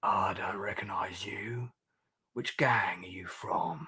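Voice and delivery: soft, slow, unhurried gruff voice. Reading a character questioning the player, in a gruff voice. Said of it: "In a gruff voice".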